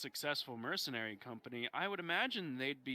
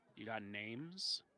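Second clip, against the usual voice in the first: lowered, low-voiced, confidential tone; 3 semitones lower, 4 dB quieter than usual. A character leans in to ask about bandits, in a lowered voice. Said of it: "She uh lowers her voice and leans in".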